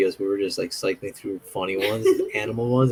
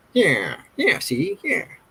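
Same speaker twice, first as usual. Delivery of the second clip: very high, drawling 1940s movie gangster voice; 11 semitones higher than usual. Retelling a funny cat video: 1940s movie mobster voice. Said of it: "it sounds like that mobster from the, uh, forties movies".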